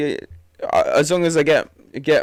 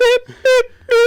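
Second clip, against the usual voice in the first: high, loud mock censor beep. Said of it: "beep out Watford every time".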